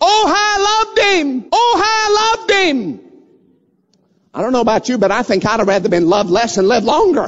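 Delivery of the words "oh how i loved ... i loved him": play-acted, very high, long, drawn-out wailing scream. Retelling a story of a woman bent over her shot husband: imitating a woman screaming. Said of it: "she was screaming".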